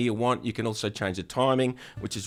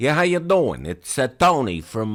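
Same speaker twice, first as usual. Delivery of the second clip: loud, shaky put-on Brooklyn accent; 3 semitones higher, 7 dB louder than usual. Opening a guitar lesson with a put-on voice: Brooklyn accent. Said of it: "I have no idea if that accent's any good".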